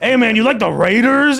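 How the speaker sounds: put-on intense voice. Retelling how a guy filming his TV talks to it: imitating an intense voice. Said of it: "he's got that, like, intense voice".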